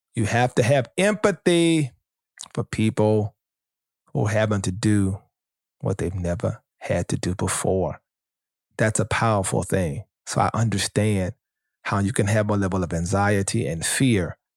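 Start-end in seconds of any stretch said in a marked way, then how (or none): 0.2-8.0 slow, deliberate, halting delivery with pauses mid-phrase. A speaker repeats a point slowly for the people in the back. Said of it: "Let me say it slow".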